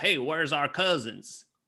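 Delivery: put-on Italian accent putting on Southern, Italian vowels. Describing Italians doing Southern accents, Italian accent doing Southern accent. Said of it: "with Italian accents doing Southern accents".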